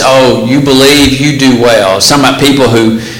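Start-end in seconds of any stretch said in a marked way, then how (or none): none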